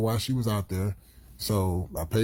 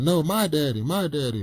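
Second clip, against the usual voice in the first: acted-out, high, slow, angry little child voice; 6 semitones higher than usual. Retelling how a three-year-old daughter protested in the car: imitating an angry child. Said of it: "my daughter's getting mad".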